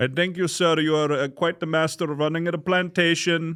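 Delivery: put-on role-played Punjabi Indian accent. Doing accents back and forth with another speaker: Punjabi Indian accent. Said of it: "master of that Punjabi accent".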